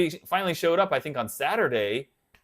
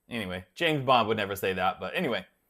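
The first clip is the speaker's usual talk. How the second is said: normal talking voice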